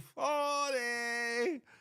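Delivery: high, slow drawn-out delivery. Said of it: "I said".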